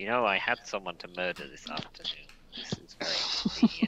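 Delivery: quiet, under-the-breath mutter to oneself. Playing a character who comments on a useful rod: muttering to oneself. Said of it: "I'm going to mutter to myself".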